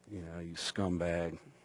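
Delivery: muttering under breath. Retelling silently judging a guy who approached, muttering under breath. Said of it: "judging him under my breath".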